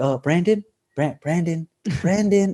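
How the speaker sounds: mild, soft-spoken, gentle store-clerk voice. Retelling how a store worker kept calling the security guard: imitating a soft-spoken, nice voice. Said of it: "he was so soft-spoken and nice".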